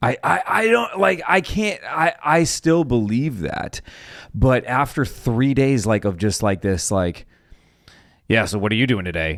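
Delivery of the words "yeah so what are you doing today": mock-sarcastic, much faster. Retelling how someone talked to them after three days, mock-sarcastic. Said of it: "like sarcastic".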